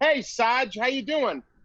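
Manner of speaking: put-on Boston accent. Retelling how dorm mates greeted the speaker: imitating a boston accent. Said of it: "so they had this accent".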